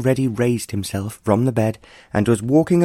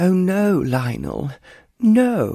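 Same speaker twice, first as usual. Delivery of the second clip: very slow, drawn-out, high, swooping exclamation; 7 semitones higher than usual. Narrator reads the Countess answering Lionel's leave-taking, exclaiming. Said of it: "the Countess exclaimed".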